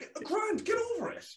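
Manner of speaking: exasperated rising rant.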